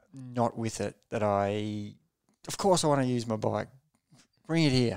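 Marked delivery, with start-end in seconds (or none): 2.4-4.9 loud, aggressive, demanding tone. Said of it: "like, aggressively demanding".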